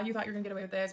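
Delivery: mock taunting laughter. Telling how Mom turned on them once the officer left; imitating Mom's mocking laughter. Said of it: "laughing at me".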